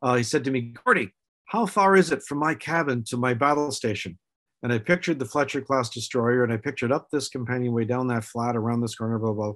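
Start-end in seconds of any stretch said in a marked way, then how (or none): 0.8-4.2 put-on own natural English accent. Retelling what Stephen asked before a scene, imitating Stephen's English accent. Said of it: "Stephen came to me with his English accent".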